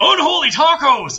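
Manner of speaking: shrill, very high scream. Narrating a story, Pick dives out of the way of a flying stick: screaming. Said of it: "Pick screamed".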